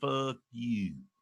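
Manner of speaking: very low Texas accent with a little lilt. Comparing regional accents, the speaker shows how Texans say it: Texas accent with a lilt. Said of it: "Texans say "fuck you" with a little lilt to it".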